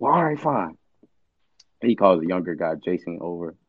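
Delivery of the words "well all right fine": frustrated, fed-up, reluctant tone with raised pitch. Retelling someone's reply after a demand for gas money: imitating someone frustrated. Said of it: "So he's just kinda frustrated".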